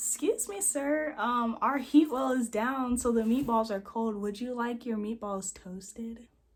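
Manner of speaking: overly courteous, extra-polite service voice. Speaker retells serving a Subway customer, retelling a put-on smile. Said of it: "I'm gonna put on a smile".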